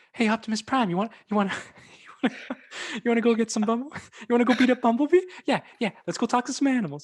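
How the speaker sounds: deliberately bad voice, pitched very high. Mocking an actor's voice the way a YouTuber does: bad high-pitched impression. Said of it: "that was a bad impression".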